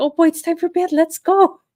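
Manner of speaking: play-acted high, loud, eager excitement. Voicing the pet Peanut about bedtime: voicing Peanut, put-on excitement. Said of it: "He gets real excited, like".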